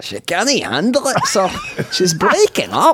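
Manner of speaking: put-on Scottish accent. Asked by another speaker to do a Scotty accent, Scotty accent impression. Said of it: "Do a Scotty accent".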